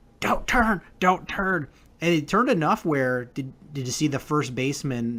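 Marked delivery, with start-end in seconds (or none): 0.2-1.7 pitched-up mock screaming. Retelling watching a baseball play on TV: imitating own screaming at TV. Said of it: "I'm just screaming at my T V going".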